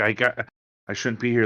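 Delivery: very nervous, anxious. Voicing a tiefling who avoids eye contact and barely listens, nervous. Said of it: "He's very nervous".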